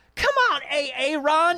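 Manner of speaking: very high-register, very slow, drawn-out teacher voice. Describing a comedian's substitute teacher sketch: Keegan-Michael Key substitute teacher voice. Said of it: "that sort of voice that he does".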